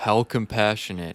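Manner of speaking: sinister, creepy put-on chuckle. Quoting a killer who chuckles in an interview: chuckling John List impression. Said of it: "that was a pretty good impression".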